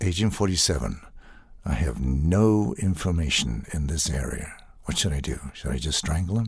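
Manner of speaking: low, flummoxed, awkward voice. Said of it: "reading as the character Agent forty-seven".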